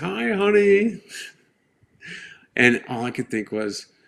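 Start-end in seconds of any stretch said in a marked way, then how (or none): 0.0-1.0 very high, bright, cheerful tone. Recalling his mom arriving at Walter Reed to greet him: retelling her bright voice. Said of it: "she comes in with this bright voice".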